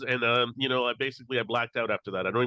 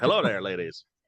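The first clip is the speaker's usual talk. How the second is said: bad, fake put-on Irish accent; 4 semitones lower than usual. Joking about chatting up the ladies at the golf show: bad irish accent. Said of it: "I don't know how I can't do an Irish accent".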